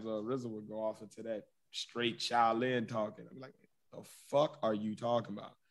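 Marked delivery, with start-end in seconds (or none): none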